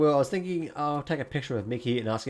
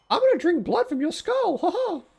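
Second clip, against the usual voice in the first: piped out loud and quick; 6 dB louder than usual. Role-playing while the others object, the speaker talks as Mickey: Mickey Mouse voice. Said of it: "Mickey, come on, that's weird".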